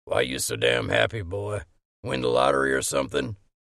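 put-on very low, loud, gravelly, half-drunk, snorting voice. Narrator reads Hollingsworth's question to the smiling narrator, gravelly half-drunk voice. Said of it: "snorted in his gravelly, half-drunk voice".

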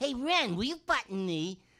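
very high, very loud, amped-up voice. Explaining how a cartoon voice became Stimpy: amped-up Stimpy voice. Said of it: "he was amped up like".

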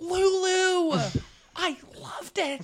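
very high, slow, stretched-out voice. Acting out a greeting at an awards luncheon: Laura Dern voice. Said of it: "doing Laura Dern".

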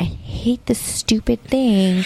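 slow whisper. Mother retelling what she whispered with her daughter three rooms away, retelling a whisper. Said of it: "And I whispered".

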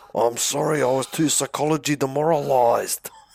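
New Zealand accent. Answering why someone didn't win, in a new zealand accent. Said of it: "they get a Kiwi accent all of a sudden".

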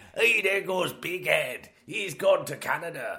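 loud, bad fake Scottish accent sliding into pirate voice. Attempting a Scottish accent for the listeners: bad Scottish accent, pirate-like. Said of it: "That was like a pirate".

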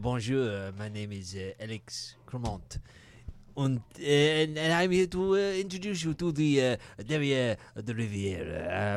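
halting put-on French waiter accent, full of uhs. Playing a waiter welcoming diners to a restaurant: put-on French waiter voice. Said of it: "our waiter will introduce himself".

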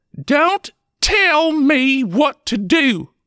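very high, very slow, sharp snappy retort. Reading a story, a wife answers her husband's suggestion, snapping. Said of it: "she snapped".

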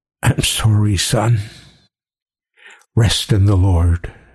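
hushed whispering. Narrator reads a man speaking over a dead youth, whispered. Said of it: "he whispered".

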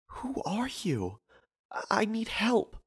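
very high, soft, halting stutter. A woman answers a man squinting at her through the boards: stuttering. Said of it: "she stuttered as she spoke".

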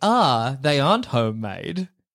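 put-on smug, self-satisfied tone. Retelling own past words about something not homemade: imitating own smug remark. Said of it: "and I got full of smugness".

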